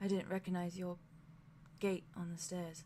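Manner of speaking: cracked voice, very soft and gentle murmur. Narrating a character who speaks to the listener, very soft. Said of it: "he just very softly says".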